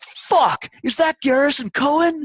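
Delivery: high-pitched, loud, excited and stunned outburst.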